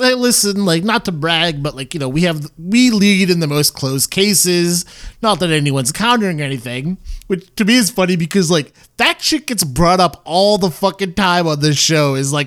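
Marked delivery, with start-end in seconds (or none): none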